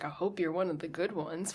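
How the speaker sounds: ordinary talk, nothing marked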